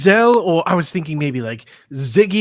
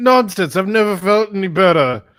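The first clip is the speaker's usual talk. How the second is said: put-on drunk voice, much higher and louder; 2 semitones higher, 4 dB louder than usual. Hugo, told to go to bed, answers drunk. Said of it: "Hugo like drunkenly takes out his rapier".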